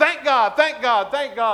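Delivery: gutsy, emboldened, loud, high-pitched repeated yell. Telling a joke about a horse rider, retelling a yell. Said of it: "he just yells".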